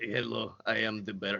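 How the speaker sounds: Russian accent, deep, slow and hushed. Voicing the Bear after another speaker asks for it: the Bear in Russian accent. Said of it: "you got to give him a Russian accent".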